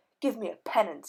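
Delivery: words growled out. After confessing to the narrator, he speaks again, growling. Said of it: "he growled".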